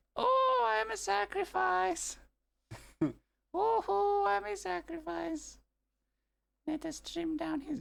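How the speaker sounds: drawn-out, creaky, very high cartoon squeak. Speaker slips into a voice while commenting, doing a cartoon character voice. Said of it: "Why am I still doing the voice?".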